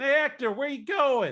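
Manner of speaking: loud, very high-pitched shout. Describing an acquaintance calling out to someone passing: imitating a yell. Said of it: "sort of yells out".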